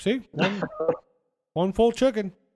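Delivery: put-on muffled full-mouth voice. Describing a scene where Taylor hands over chicken, imitating Taylor with mouth full. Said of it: "he's like got his mouth full".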